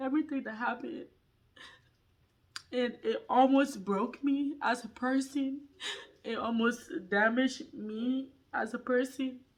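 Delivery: words wept through tears, crying voice. Speaker telling listeners why they are crying, crying. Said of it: "That's why I'm crying".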